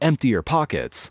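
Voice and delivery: acted stern woman's yell, sharp but contained. Retelling how the woman yelled again: imitating a woman yelling. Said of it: "She yelled at me again".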